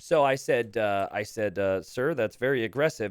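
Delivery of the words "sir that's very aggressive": ordinary delivery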